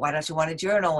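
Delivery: ordinary delivery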